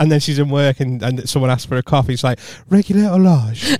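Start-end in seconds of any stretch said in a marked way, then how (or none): 2.7-3.6 polite, posh, pitched-up telephone voice. Imitating her mum taking a coffee order at the cafe: mum's telephone voice. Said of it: "My mum's got a telephone voice".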